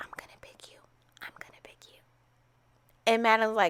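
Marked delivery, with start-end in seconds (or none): 0.0-2.0 soft, secretive whisper. Retelling what a contestant whispered to another: imitating a whisper. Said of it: "He's whispering to her like".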